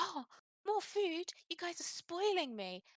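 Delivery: mock very high, delighted, happy little voice. Describing a game moment, the speaker acts out a voice heard in your head, imitating a happy voice. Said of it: "he sounds really happy".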